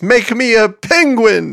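loud calling out, high-pitched and slow.

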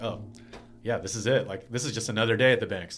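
ordinary talk

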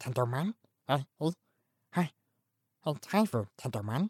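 quiet cartoon insect voice. Describing a Digimon character's voice, doing Tentomon voice. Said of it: "he's like".

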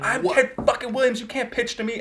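put-on very high, shrieking, screaming boastful voice. You act out a baseball batter screaming at nobody during batting practice, imitating Ted Williams screaming. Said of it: "And he's screaming at nobody".

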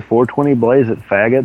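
ordinary talk

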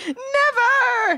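high, drawn-out scream of "never". Retelling a cartoon scene where a hero refuses to surrender: imitating someone screaming. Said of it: "screaming on the porch".

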